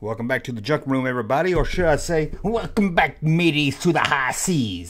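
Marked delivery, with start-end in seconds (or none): 2.4-4.9 bad, hammy, put-on pirate voice. Host welcoming viewers back to look at pirate action figures, in a horrible pirate impression. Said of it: "horrible, horrible pirate impression".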